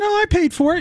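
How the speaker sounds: voice climbing way up, very high-pitched. Pressed on who paid for a tattoo from a bet: voice getting higher. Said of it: "your voice is getting higher".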